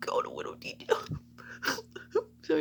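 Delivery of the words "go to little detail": whispered, choked-up, tearful. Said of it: "I'm gonna cry again".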